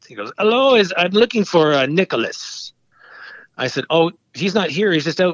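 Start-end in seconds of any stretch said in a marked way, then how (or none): 0.4-2.8 put-on heavy, thick French accent, slow. Retelling a phone call from a caller, Rogie Vachon, in a very heavy French accent. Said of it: "very heavy French accent".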